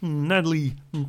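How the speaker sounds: very low, croaky, deliberately bad put-on voice.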